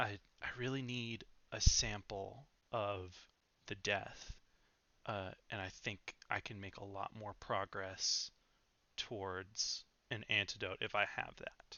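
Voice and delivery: put-on whisper. Voicing Orin, who leans over to a player: Orin whispering. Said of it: "Orin kind of leans over and whispers to you".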